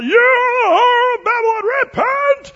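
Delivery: very loud, very slow, shrill booming preacher's cry. Recalling a man who screamed at passersby in Southern Oregon, retelling his yell. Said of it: "He would yell".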